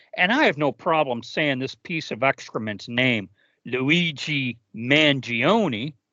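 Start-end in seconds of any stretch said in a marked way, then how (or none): 3.6-5.9 sarcastic, mocking pronunciation. Naming a person while noting the sarcasm: sarcastic pronunciation of the name. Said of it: "note my sarcasm in the pronunciation".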